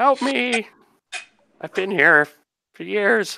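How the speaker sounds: tiny piping voice, very high pitched. Game master voices a small character the players can hear, in a little piping voice. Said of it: "can hear his little piping voice".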